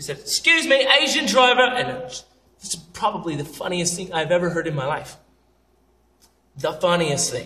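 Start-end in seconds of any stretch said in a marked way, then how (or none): 0.2-1.6 put-on British accent, loud and very high. Retelling what the hostess said pushing her cart: imitating a British accent. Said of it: "It was a British accent popping in".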